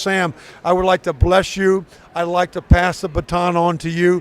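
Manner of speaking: normal talking voice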